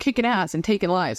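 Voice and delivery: ordinary talk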